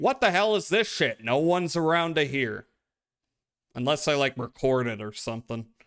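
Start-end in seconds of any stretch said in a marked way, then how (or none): 0.0-1.2 put-on, raw, high-pitched screaming outburst. Describing playing a bad game alone: imitating own screaming. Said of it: "and I'm screaming".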